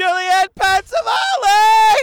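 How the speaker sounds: screaming. Shouting a name in the studio while sharing news, screaming. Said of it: "Why are you screaming at me?".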